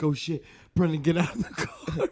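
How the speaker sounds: high, loud, play-acted freaked-out panicked yell. Recounting thinking they'd crashed, yelling at brendan, retelling a panicked shout. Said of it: "I started freaking out".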